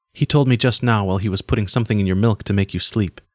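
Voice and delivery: ordinary talk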